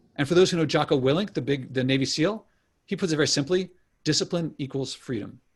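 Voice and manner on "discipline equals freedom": plain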